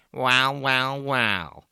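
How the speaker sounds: familiar low voice through the nose. Someone who snuck up behind two people greets them in a nasal voice. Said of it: "a familiar nasal voice said to us".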